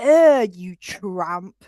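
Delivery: play-acted aggressive, scornful little jab. Retelling how a stranger spat on the ground near the speaker and Mum, retelling an aggy outburst. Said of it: "I was so aggy".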